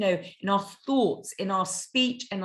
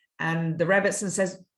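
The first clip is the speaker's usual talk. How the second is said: ordinary delivery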